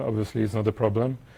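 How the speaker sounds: plain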